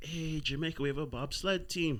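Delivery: put-on whisper. Retelling what a mother said right in his ear: imitating a whisper. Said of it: "right in my ear, and whispers".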